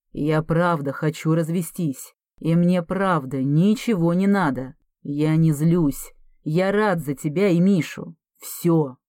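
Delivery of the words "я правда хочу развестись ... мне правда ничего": ordinary delivery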